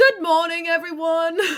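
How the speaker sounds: loud calling out. Playing a character who greets the room: loud raised-voice greeting. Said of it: "he's going to raise his voice and say".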